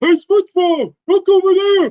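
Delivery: very high, very loud yelled cartoon voice. Showing the others a Patrick Star voice on request: Patrick Star voice. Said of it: "I could do a Patrick Star voice".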